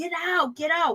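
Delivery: put-on furious cry, flung out but contained. Recounting a fight, acting out a woman furiously screaming at a man. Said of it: "She is so mad at Dennis right now that she's just like".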